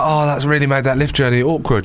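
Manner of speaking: ordinary talk, nothing marked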